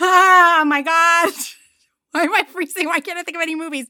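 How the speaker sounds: rattled, panicky, high, flustered voice. Answering a timed quiz question and blanking on an answer; flustered, needing to calm down. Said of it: "I have to calm down".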